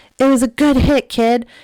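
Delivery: loud, high shouting. Retelling what a parent on the sideline said: imitating someone yelling. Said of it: "Josh yells".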